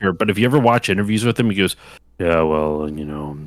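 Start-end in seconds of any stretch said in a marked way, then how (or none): 2.2-3.4 low, flat, monotone mumble. Describing how Harrison Ford talks in interviews: monotone Harrison Ford impression. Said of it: "He's very kind of monotone".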